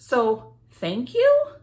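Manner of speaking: rising, questioning intonation ending on you. Unsure about thanking Brenda for the idea: rising on you, like a question. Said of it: "That's how we'll say it, with a question mark".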